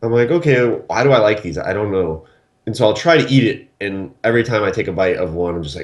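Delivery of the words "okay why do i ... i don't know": usual speaking voice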